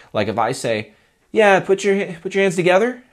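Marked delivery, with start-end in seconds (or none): 1.6-2.9 very high, unsure, tentative, question-like tone. Showing how tonality reinforces what you say, tentative, like asking a question. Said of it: "Notice how it sounds like I'm asking a question".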